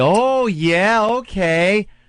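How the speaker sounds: acted patronizing, talking-down tone, high-pitched. Imitating people interviewed by a news outlet: mock-condescending voice. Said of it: "put on that condescending, like, voice".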